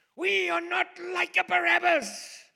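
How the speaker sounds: very high, mock shouting in put-on Italian accent. Speaker retelling a woman in the auditorium screaming at him, Italian accent. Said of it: "She screams out in an Italian accent".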